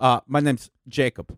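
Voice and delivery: put-on heavy German accent. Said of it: "he had a very heavy accent".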